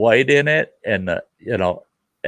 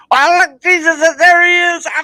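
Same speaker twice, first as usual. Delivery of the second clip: put-on, very high, loud, shrill, whining screech; 5 dB louder than usual. Retelling how a brute he knows reacted during a game, mock screeching and whining. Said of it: "screeching and whining like a little girl".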